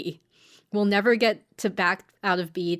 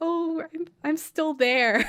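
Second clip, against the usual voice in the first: put-on, slow, drawn-out, pitched-up, emotional delivery; 9 semitones higher than usual. Retelling a scene where a character gets emotional: imitating someone getting emotional. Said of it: "Mommy gets all emotional, being like".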